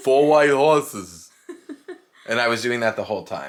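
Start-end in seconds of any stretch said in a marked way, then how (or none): 0.0-1.3 very loud, booming voice. Quoting a line from the movie in Andre the Giant voice. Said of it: "I like doing Andre the Giant's voice".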